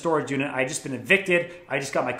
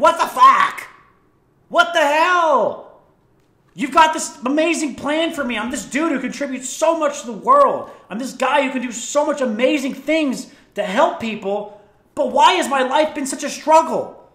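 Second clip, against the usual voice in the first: mock pissed-off, fed-up, ranting angry yell; 9 semitones higher, 4 dB louder than usual. Describing a book, the speaker acts out an old man yelling at god. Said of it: "One day he just yells at God".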